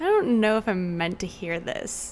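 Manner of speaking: ordinary talk, nothing marked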